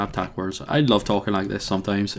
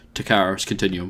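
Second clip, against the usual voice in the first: plain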